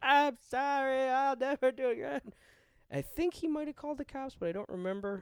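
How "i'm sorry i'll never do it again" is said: mock sobbing, very high, slow, tearful. Retelling an apology to the guy who caught them: imitating own crying. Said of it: "I just bursted into tears".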